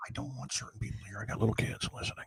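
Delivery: hushed voice. Asking a guest a question while children listen: whispering. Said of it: "why are you whispering?".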